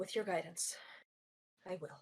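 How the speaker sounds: hushed whisper under the breath. As a character keeps writing, she whispers to herself. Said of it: "she kind of whispers to herself".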